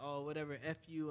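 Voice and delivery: ordinary delivery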